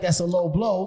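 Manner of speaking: ordinary delivery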